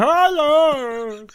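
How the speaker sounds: very high, drawn-out, strange voice. Mocking an actor who can't talk properly: mocking Andrew Scott's strange voice. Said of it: "It's not as if he can even talk properly".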